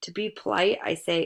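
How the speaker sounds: ordinary delivery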